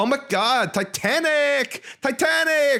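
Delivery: put-on high, drawn-out Valley Girl accent. Retelling what teenagers in a theater said: imitating valley girl slash mexican accent. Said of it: "Valley Girl slash Mexican accent".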